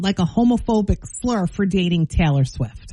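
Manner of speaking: normal talking voice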